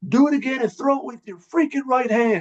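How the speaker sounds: play-acted, very high, shrieked screaming. Player retelling how the coach screamed at him during practice: retelling the coach's screaming.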